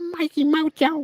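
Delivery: squeaky, high-pitched voice. Showing the high-pitched voice someone does: Mikey Mojo squeaky voice. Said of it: "voice you had with the real high pitch".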